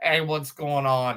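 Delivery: mock Boston man voice, put-on accent. Describing a Boston guy with that accent to a co-host; imitating a Boston accent. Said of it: "Boston guy with that accent".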